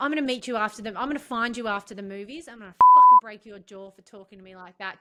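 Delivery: mock fury, fast and loud. Retelling what a stranger said to them at the movies: retelling a full-on threat. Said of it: "Just full on".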